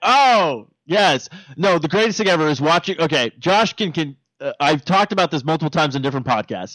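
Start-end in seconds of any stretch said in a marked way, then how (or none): none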